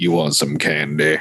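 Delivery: real deep, low, menacing, threatening voice. Retelling a scary movie scene: Keith David deep menacing voice. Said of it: "just a menacing voice".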